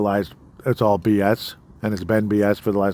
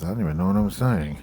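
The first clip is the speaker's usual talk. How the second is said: put-on quiet mutter; 3 dB quieter than usual. Retelling a line muttered under the breath: muttering under breath like Joe Biden. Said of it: "really quietly under his breath".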